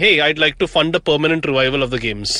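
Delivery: ordinary talk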